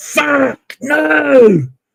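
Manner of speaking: put-on very high, sudden shriek, "no" stretched out. Retelling a chat room mistake on the phone: imitating own scream. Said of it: "I suddenly screamed out, like".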